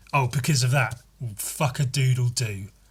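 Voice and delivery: sarcastic, pretend-impressed mock awe tone. Describing a film scene, speaker retells a character's reaction: retelling sarcastic fake awe. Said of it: "sarcastically uh, pretending or to be impressed".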